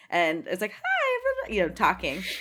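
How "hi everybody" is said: put-on very high, bright childlike kid voice. Retelling a first chat room experience: imitating own childhood self. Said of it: "Did you use that voice?".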